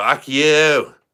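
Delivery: put-on drunken voice, very loud and high, yelling. Retelling a video of Sarah on the couch, imitating drunk Sarah swearing. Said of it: "pissed drunk".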